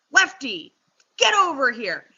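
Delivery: grumpy, grouchy delivery with swooping pitch. Retelling calling the dog Lefty during training, retelling a grouchy command. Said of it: "I'm going to sound grouchy".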